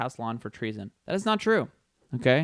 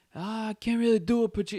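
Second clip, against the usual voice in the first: fumbled words, pitched up and drawn out; 9 semitones higher than usual. Trying out an impression to test it: bad Al Pacino impression. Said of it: "That sounded like De Niro".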